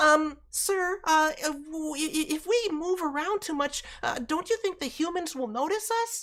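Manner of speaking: very high little cartoon kid voice. Voice actor demonstrates a kid character's line: Dimlet kid voice. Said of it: "attempting to do that Tails voice".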